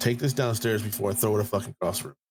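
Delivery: furious, seething, threatening tone. Retelling telling the son to take the food away: imitating own angry order. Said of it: "I was that pissed off".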